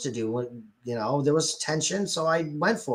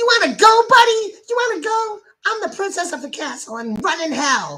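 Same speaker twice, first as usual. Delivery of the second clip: shrill, rushed, loud, squealing mocking put-on voice; 9 dB louder than usual. Reading out Solaria's reply, doing a Solaria voice. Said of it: "me doing that voice".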